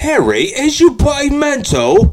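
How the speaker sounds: put-on British accent, high and slow. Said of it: "Ron from Harry Potter".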